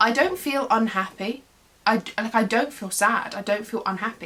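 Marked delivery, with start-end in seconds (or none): none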